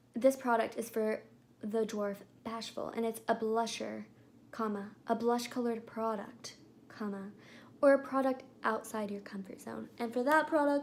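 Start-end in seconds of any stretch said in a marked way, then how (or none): none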